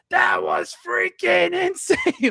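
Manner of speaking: mock excited announcer screech, very high, drawn out. Remembering a wrestling commentator's call, imitating Don West screaming. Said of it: "I just remember Don West screaming".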